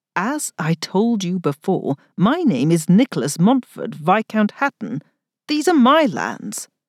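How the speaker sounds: ordinary delivery, nothing marked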